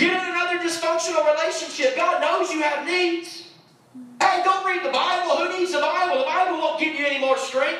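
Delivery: high, enticing, goading shouting. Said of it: "he starts shouting to try to distract you".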